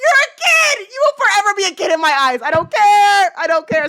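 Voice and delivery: insistent, worked-up, loud, high-pitched yelling. Reacting to learning someone's age, into the mic: yelling. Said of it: "I'm yelling in this thing".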